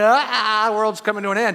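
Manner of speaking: put-on play-acted frantic, wailing, screaming baby cry. Retelling how one newborn twin acted, imitating a screaming baby.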